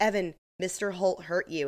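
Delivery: ordinary talk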